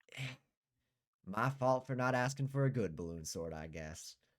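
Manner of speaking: resigned, grudging, dismissive, unimpressed voice. Voicing a woman who rolls her eyes at a bad balloon sword: unimpressed eye-rolling tone. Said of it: "rolls her eyes and shakes her head".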